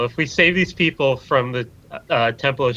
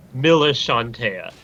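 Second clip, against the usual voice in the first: usual speaking voice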